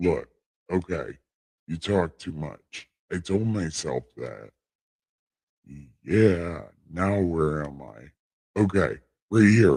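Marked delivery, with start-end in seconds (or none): 0.0-4.5 a soft, divine-sounding voice. The speaker addresses herself: God voice. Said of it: "God voice is working".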